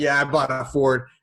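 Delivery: mock cheerful voice. Retelling a phone call where the caller sounds all happy: imitating someone sounding happy. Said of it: "he's all happy".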